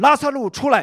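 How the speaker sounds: very high, loud, calling-out cry.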